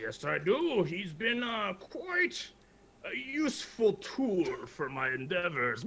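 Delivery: furious, angry put-on orc voice. Playing an orc, answering the one who came for his friend Mundo; angry orc voice. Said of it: "I'm a very angry orc".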